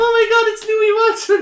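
very high, shrill, loud, star-struck shriek. Retelling a stranger screaming at a celebrity sitting in a car, retelling a scream. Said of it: "someone comes up screaming at him going like".

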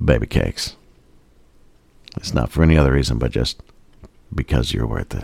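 very low, sexy, seductive voice. Speaker tries out a variation on the L'Oreal slogan: sexy voice. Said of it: "you got to say it in a sexy way".

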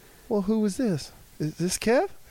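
put-on girl voice. Retelling a phone call to a girl from a bedroom phone: imitating a girl on the phone. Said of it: "and she'd be like this".

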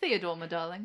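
put-on British accent. Imagining how a man spoke when he was theodore, use a british accent. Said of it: "when he spoke in a British accent".

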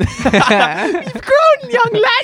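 put-on sing-song granny voice, very high and very slow. Teasing a friend about having grown: imitating a nan. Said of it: "you sound like a nan".

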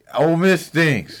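shouting. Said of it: "why you yelling at me?".

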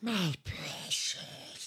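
hissing, hushed, whispered creature voice. Taking turns doing character impressions, Gollum voice. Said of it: "I can do Gollum from Lord of the".

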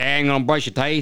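put-on Australian accent. Imitating people at a dentist office, in an Australian accent. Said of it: "That talked Australian".

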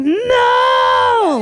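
mock, very high, eerie, nails-on-chalkboard shriek. Showing how the girl's eerie scream sounded: imitating an eerie scream. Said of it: "Like that".

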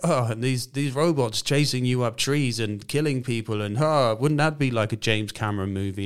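light-hearted, half-laughing, jokey delivery. Mocking how the advocate of these advances delivers warnings: imitating a laughy, jokey delivery. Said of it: "delivered in this laughy, jokey".

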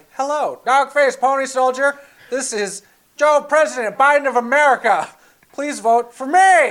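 shrill, very loud, high politician voice. Joking about an automated campaign call, the speaker voices the caller: Joe Biden impression. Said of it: "And then he speaks like".

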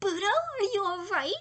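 very high, chirping voice with audible concern. Reading a story aloud, Ayano skips up to Budo and speaks, chirpy voice. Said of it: "she chirped".

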